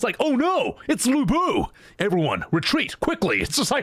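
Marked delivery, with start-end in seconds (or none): 0.2-3.4 over-the-top, exaggerated American accent with swooping tune. Mocking a game's english voice acting, doing an exaggerated american accent. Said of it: "everyone has the most American accent ever".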